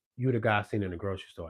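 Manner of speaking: usual speaking voice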